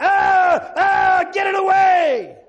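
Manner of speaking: very high, loud, shrill, foolish scream. Recounting someone backing away from a gospel tract, imitating someone screaming. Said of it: "that guy started backing up and screaming like a fool".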